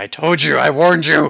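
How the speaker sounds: high, very loud screamed outburst. Voicing an attacking creature that calls out during combat: screaming. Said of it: "it will scream out".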